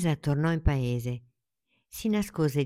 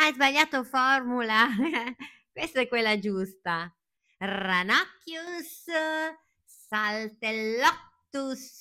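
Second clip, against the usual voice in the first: laughing while speaking, pitched-up voice; 9 semitones higher than usual. Laughing at a child's failed toy-wand spell and offering the right one, laughing. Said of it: "Adalgisa rise e disse".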